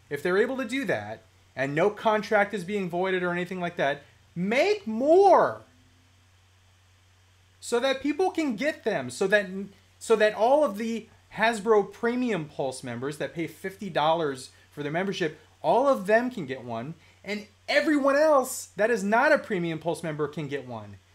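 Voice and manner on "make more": louder, higher heated rant. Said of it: "I got a little heated there".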